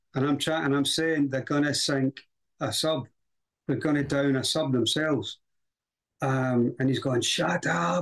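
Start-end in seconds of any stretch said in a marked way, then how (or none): 7.2-8.1 mock scream, pitched higher. Handcuffed speaker retelling what a man screamed in his face, retelling a scream. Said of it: "He's screaming in my face".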